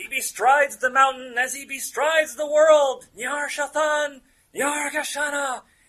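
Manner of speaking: very high, very loud, shrill full-voice scream. Game master voices the lady on top of the ledge, screaming. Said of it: "the lady on top of the ledge screams".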